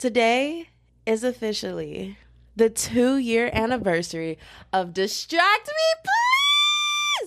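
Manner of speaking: high, rising gleeful excited squeal, please drawn out. Announcing the podcast's two-year anniversary: squealing with excitement. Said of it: "I'm not gonna squeal anymore".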